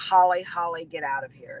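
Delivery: hoarse, raspy, deep, slow voice. Retelling a voice heard while alone in a walk-in closet, raspy and deep. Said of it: "in this raspy, deep voice".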